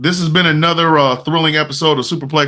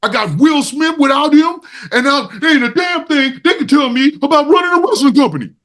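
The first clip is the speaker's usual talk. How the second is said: put-on angry yelling, higher; 10 semitones higher than usual. Acting out a wrestling boss yelling about someone: imitating Tony Khan yelling. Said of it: "he's yelling at him".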